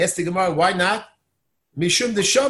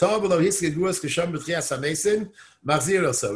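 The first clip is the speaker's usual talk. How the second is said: ordinary talk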